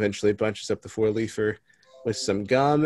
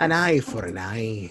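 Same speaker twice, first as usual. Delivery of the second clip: put-on pirate voice and accent. Redoing the leprechaun's line after another tried: put-on pirate voice. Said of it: "He's a pirate now".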